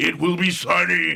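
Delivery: dramatic, slow, creaky, rough-edged, drawn-out delivery. Retelling how a local weather announcer read the forecast: imitating dramatic Orson Welles-style voice. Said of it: "this Orson Welles, like, just dramatic voice".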